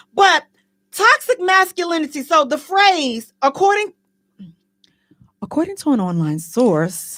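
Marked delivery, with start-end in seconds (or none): 3.4-7.1 very deep, low newscaster voice. On the show, the host reads from an online source in news reporter voice. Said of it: "that's my reporter voice".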